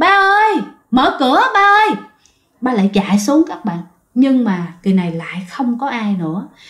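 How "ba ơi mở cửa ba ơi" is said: put-on very high child's voice calling out. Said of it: "cái giọng tiếng kêu của bạn".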